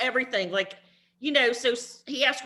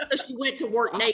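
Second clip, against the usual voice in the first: ordinary talk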